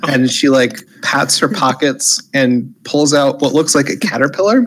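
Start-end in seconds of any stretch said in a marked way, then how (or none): none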